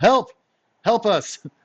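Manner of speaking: very high-pitched, loud shouting. A game master voices a spearman calling up to the chasm, shouting. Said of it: "shouts up to the chasm".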